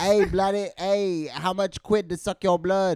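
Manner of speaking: very loud, put-on English accent. Asked for English rather than Transylvanian, playing a vampire in a put-on English accent. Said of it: "You'll do an English accent".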